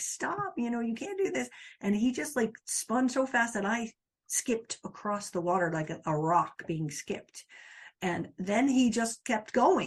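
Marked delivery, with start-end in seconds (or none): 0.0-1.5 screaming, pitched high. Recalling a fast jet ski ride with him doing donuts, acting out screaming. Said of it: "and I'm screaming".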